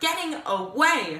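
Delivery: plain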